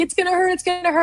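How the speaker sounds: very high, put-on scared, fretting child's voice. Recalling having a loose tooth as a kid, imitating a scared kid. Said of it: "we're like".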